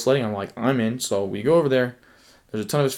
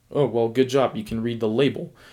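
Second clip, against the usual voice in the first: snide, sarcastic, mocking tone. Retelling a friend's remark at a car show: imitating Jace's sarcastic remark. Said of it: "made a sarcastic comment like".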